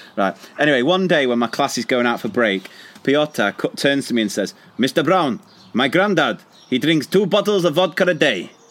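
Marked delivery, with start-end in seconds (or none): 4.8-8.5 put-on Russian accent. A teacher retells a pupil speaking to him at break, imitating Piotr's Russian accent. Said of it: "Do you like my Russian accent?".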